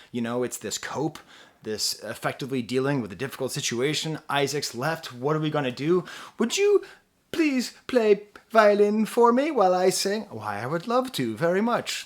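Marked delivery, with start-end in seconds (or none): 6.3-11.6 bad, failed British accent impression, higher pitched. Acting out two bandmates asking each other for help: failed British accent. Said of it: "That was not even a British accent".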